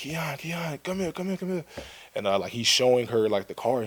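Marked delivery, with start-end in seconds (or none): 0.0-1.6 put-on, high-pitched screaming call. Retelling dad walking through the door and calling out: imitating dad screaming. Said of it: "just screaming".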